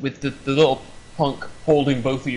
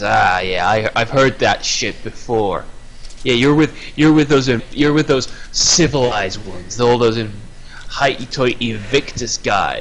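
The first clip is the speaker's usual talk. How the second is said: mock sneering, lower pitch; 3 semitones lower, 3 dB louder than usual. Telling listeners how a man answered a warning not to attract attention, retelling a sneer. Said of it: "He sneers and says".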